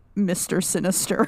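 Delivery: ordinary talk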